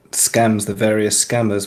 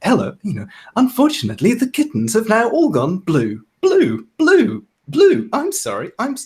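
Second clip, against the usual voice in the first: very high, swooping, glitchy malfunctioning smart-speaker voice; 12 semitones higher than usual. Retelling a woman's prank on scammers, imitating Alexa glitching. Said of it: "but in the perfect Alexa voice".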